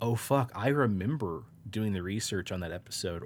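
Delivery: ordinary talk, nothing marked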